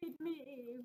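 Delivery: spooky, eerie ghost cat voice. Imitating a pet cat asking for food: imitating a ghost cat. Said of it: "my cat sounds like a ghost cat".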